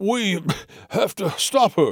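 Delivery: high, wheezy, out-of-breath voice. Trailing behind as the others run after a departing woman, a man speaks, wheezing. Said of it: "he wheezed".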